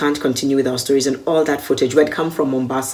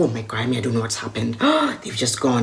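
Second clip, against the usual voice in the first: flustered, panicking man's voice, swooping; 3 semitones lower, 4 dB quieter than usual. Retelling how a man reacted while everyone waited: imitating a panicking man. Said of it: "this man is panicking".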